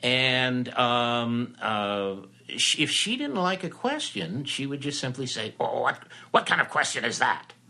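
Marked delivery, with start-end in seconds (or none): 5.6-7.4 gruff, smoky, whiskey-soaked voice. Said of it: "the smoky whiskey voice".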